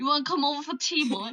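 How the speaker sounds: put-on Scottish accent. Comparing british accents in conversation, demonstrating a scottish accent. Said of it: "if you had like Scottish".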